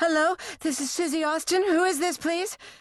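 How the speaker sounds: very high, out-of-breath voice. A girl picks up the phone to answer a caller, breathless voice. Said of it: "Susie said in a breathless voice".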